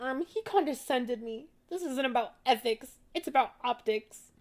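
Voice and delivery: high, put-on derisive, taunting voice. Reacting to a video, mimicking what she said: mocking imitation of her. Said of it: "And then she's like".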